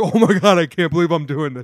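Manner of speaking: chuckling to himself, loud, laughing delivery. Describing a player waving to fans after a catch, imitating him laughing. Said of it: "starts laughing and smiling to himself like".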